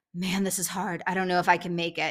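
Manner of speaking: imitated voice of someone in pain. Retelling what a struggling runner said: imitating someone in pain. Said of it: "she's in pain".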